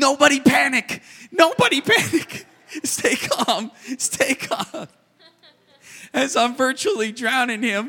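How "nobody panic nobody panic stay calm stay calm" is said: very high, loud, drawn-out yell. Recalling climbing onto Winston's shoulders while he splashed around, retelling yelling. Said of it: "I'm yelling".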